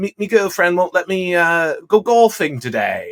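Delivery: broad put-on Australian accent. Quoting the kind of thing an australian guy says, in a big australian accent. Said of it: "he talks in a big Australian accent".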